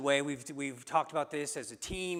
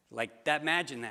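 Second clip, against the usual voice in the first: ordinary delivery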